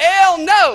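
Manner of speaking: loud Spanish spoken in a southern US accent. Showing how their redneck Spanish sounds: loud southern accent. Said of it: "it's just English with a southern accent loud".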